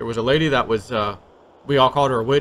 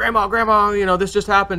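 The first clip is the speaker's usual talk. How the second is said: play-acted high, gasping, breathless panic; 8 semitones higher than usual. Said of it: "came out all out of breath".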